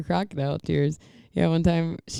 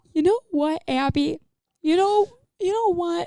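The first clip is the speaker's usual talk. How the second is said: very high-pitched voice working up fake tears; 14 semitones higher than usual. Retelling how mom starts her fake crying: imitating mom about to fake cry. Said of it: "I can always tell when she's about to cry".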